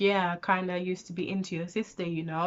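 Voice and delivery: breezy, casual, offhand, throwaway delivery. Retelling what he said about the sister: imitating a casual remark. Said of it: "he said it so casually".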